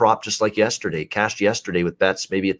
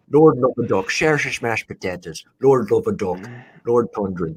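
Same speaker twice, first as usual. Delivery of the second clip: fake Irish accent, lightly done. Joking after calling a pitcher the Irishman: put-on Irish accent. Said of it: "There's my little Irish accent right there".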